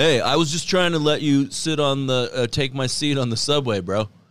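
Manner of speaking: put-on laid-back stoner surfer voice. Answering a partner's complaint in a scene, in a Spicoli voice. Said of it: "You sound like Spicoli".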